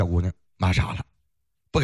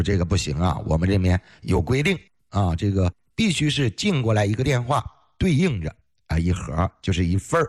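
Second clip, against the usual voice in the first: ordinary talk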